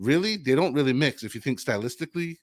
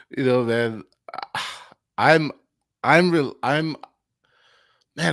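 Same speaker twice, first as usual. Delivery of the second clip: slow, halting stammer, stumbling over words, keyed up; 5 dB louder than usual. Asked what will happen in the fight: stammering with excitement. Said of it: "I'm stammering because I'm so excited".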